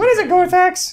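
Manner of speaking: very high, squeaky yet intimidating, menacing voice. Voicing a character asking Gorthax a question, squeaky but intimidating voice. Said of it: "somehow it sounds intimidating".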